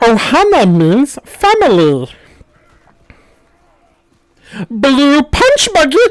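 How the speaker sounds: very high cartoon voice with wide, swooping pitch. Speaker shows the voice students love most, doing a Stitch voice. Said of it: "The one that my students love is doing Stitch".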